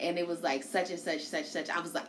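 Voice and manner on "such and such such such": ordinary talk, nothing marked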